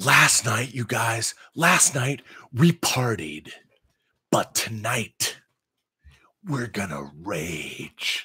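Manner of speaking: all-excited cartoon character voice, drawn out. Retelling what an excited friend announced to everyone: imitating excited Steve. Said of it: "he was all excited, you know, like, i-, i-, like an a-, animation character".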